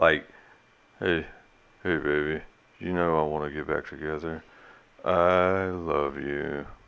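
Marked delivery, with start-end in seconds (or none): 1.0-6.6 very low, flat, unenthused monotone drone. Quoting a man asking to get back together, imitating an unenthused monotone. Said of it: "the most unenthused, monotone delivery possible".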